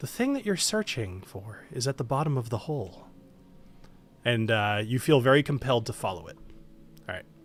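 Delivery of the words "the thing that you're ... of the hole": soft, gentle voice. Game narrator voices what a player hears in their head: gentle voice. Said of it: "you hear in your head a gentle voice saying".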